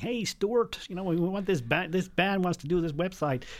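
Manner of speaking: put-on American accent. Retelling a woman's phone call from a cab in Manhattan, terrible US accent. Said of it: "Terrible US accent".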